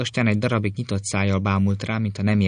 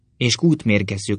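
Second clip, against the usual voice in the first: plain reading voice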